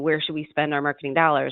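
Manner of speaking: ordinary talk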